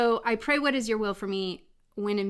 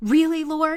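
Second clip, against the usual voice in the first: upset, exasperated, raised voice; 7 semitones higher, 6 dB louder than usual. Retelling a moment of upset while driving: imitating own upset tone. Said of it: "literally in, like, that tone".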